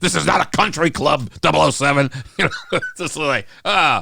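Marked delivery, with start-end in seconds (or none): 0.0-2.1 mock stern, harsh dressing-down yell. Recalling a Bond film where the hero tries to resign, imitating M yelling. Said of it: "when M yells at him and says".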